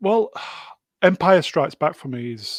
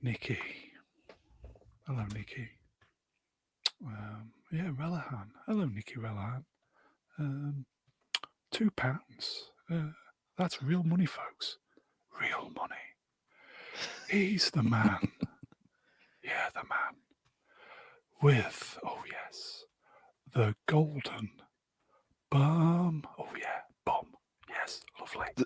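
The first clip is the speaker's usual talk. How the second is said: asmr-style voice, much quieter; 11 dB quieter than usual. Asked to show off his number one ASMR voice. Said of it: "number one A S M R voice".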